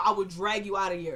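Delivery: ordinary delivery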